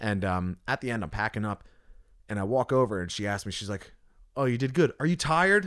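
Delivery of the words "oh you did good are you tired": loud raised-pitch delivery. Retelling a question asked after the gig: imitating someone saying it really loud. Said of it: "really loud, like she wanted somebody to hear her".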